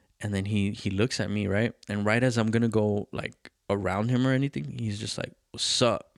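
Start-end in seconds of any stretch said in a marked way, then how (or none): 5.5-6.0 put-on drunk man's speech. Retelling how a drunk father greeted him: imitating a drunk man. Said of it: "this guy's fucking hammered".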